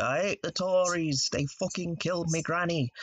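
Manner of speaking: put-on northern English voice.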